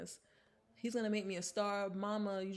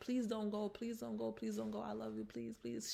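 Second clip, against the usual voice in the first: mock imploring, begging repeated over and over; 2 semitones higher, 3 dB quieter than usual. Retelling how a man begged a woman to stay: imitating someone begging. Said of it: "he's begging her to stay".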